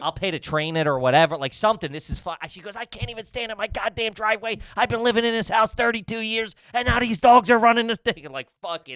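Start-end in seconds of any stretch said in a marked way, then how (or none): 2.8-8.3 high-pitched, out-of-control yelling. Retelling what a woman yelled at the lady about the dogs, imitating someone yelling. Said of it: "She's yelling at the lady".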